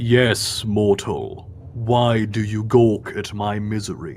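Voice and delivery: big resounding booming voice. Voicing a creature that speaks mentally to someone poking in its head, booming voice. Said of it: "a booming voice resounds in your head".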